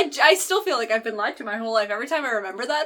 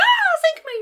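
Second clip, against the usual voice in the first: very high, squeaky, surprised exclamation. Showing how to exclaim at a surprise birthday party: high-pitched. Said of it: "Maybe not that high pitched".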